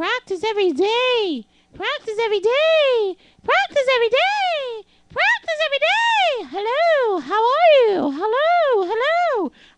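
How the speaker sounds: very high, loud speaking voice. Showing the voice exercise a college voice teacher assigned: speaking higher, not too low. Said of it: "I used to have to walk around the school speaking like that".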